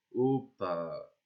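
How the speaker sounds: energy brought right down, very deep, grave voice. Demonstrating the voice they practise while explaining it, very deep voice. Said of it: "J'essaye de prendre une voix très grave".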